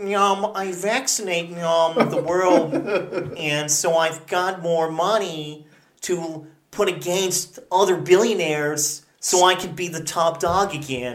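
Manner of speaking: put-on frog-like puppet voice. Joking with others about his philanthropy, speak as him in a Bill Gates impression. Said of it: "That was a pretty good Bill Gates".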